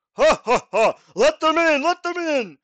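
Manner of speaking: very loud, very high, booming, rising voice. A narrator voices someone inside the mansion letting visitors in at the gates, booming voice. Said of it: "a kind of booming from the interior".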